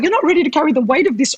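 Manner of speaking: put-on high, rushed voice of an older man.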